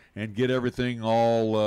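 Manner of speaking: ordinary talk, nothing marked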